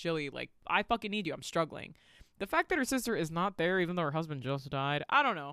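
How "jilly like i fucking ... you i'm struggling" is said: plain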